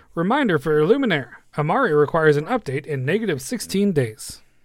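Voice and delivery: automated, echoing system announcement voice. Game master voicing an announcement that echoes throughout, echoing announcement voice. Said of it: "Sam takes on a slightly different voice".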